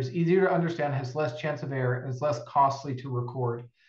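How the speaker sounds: ordinary talk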